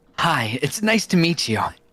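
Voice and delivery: spunky, plucky anime protagonist voice. Greeting someone in character, plucky anime protagonist voice. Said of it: "I'll come in as the plucky anime protagonist, do the voice".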